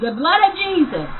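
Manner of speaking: shrill, high, loud, all-out scream. Retelling screaming as something held him at the door: retelling a scream. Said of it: "So I screamed".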